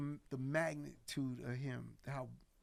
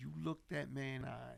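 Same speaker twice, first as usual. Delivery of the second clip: ordinary talk, nothing marked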